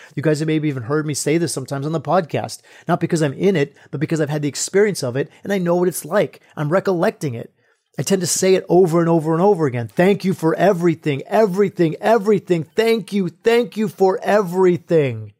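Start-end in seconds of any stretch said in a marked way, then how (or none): 9.9-15.2 repeated cry, each repeat drawn out slowly. Describing the phrase they repeat over and over during the experience, retelling a shout. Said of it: "I'm shouting it".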